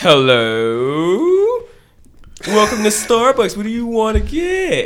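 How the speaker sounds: swooping, drawn-out cartoon lion voice, hello stretched out. Retelling how a drive-thru worker greets customers, the speaker does a Snagglepuss voice. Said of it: "he be talking like Snagglepuss".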